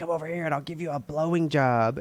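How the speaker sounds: put-on demonic, possessed girl voice. Retelling a movie scene, quoting the demon-possessed girl: imitating a possessed girl. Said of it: "the demon takes over this little girl, and she's all like".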